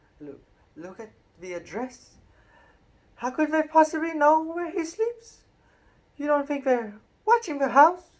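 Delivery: very high, quavering, quivering voice, rising in pitch. Narrator reading Aunt Petunia speaking to Uncle Vernon, Aunt Petunia, quivering voice. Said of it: "Aunt Petunia was saying in a quivering voice".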